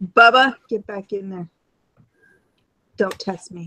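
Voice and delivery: stern, no-nonsense scolding voice. Breaking off mid-conversation to address someone nearby, using the mommy voice. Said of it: "The mommy voice".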